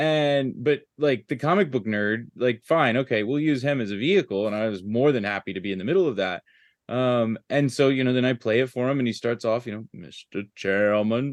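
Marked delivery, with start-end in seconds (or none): 9.9-11.3 lowered deep voice. Retelling a birthday voicemail message, imitating John Lewis deep voice. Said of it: "in his deep voice".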